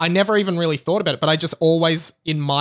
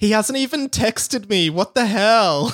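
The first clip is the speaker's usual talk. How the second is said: mock drunk girl voice, higher pitch; 5 semitones higher than usual. Comparing someone to a drunk girl at a nightclub, imitating a drunk girl. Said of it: "like a drunk girl at a nightclub being like".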